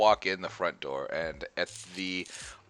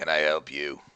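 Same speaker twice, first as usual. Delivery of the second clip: uninterested dwarf voice, lower; 5 semitones lower than usual. Voicing a bored-looking dwarf at a welcome desk: bored dwarf voice. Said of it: "a very bored-looking dwarf ... goes".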